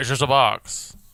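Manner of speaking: put-on 1920s old-time gangster voice. Doing an impression of a game's guard line: 1920s mobster voice. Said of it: "fucking twenties mobster there at the end".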